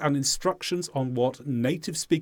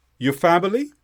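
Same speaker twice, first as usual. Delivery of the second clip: pitch goes up on family; 4 dB louder than usual. Asking about someone's family with just the topic, rising pitch on family. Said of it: "By going up with our voice at the end, that's how we show it's a question".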